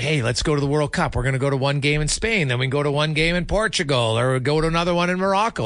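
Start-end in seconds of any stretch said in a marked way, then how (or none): none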